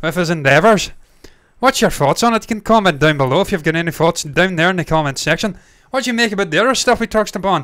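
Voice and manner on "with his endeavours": put-on Irish accent, louder. Speaker repeats his own phrase in an Irish accent. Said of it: "I should finish another Irish accent".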